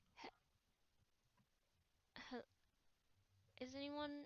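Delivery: quiet calling out. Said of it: "Are you just saying this out loud at, like, normal speaking range?".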